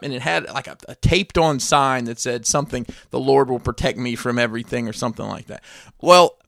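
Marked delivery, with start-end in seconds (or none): none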